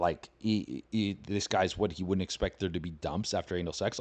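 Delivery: ordinary talk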